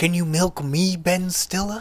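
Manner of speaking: put-on tough-guy voice, movie style. Doing an impressionist's Robert De Niro impression on stage: Heinrich Schroeder doing Robert De Niro. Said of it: "me doing a Heinrich Schroeder doing Robert De Niro impression".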